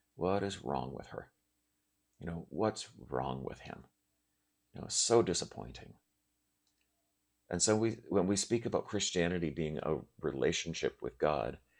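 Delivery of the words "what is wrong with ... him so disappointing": put-on disappointed, weary deep sigh. Imitating God as a disapproving parent shaking his head: mock-disappointed deep sigh. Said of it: "he's with a deep sigh".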